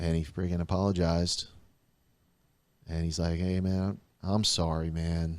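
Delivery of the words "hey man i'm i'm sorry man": imitated sad, contrite, remorseful tone. Retelling someone's long-awaited apology: imitating a sad, contrite apology. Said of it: "that real contrition in the voice".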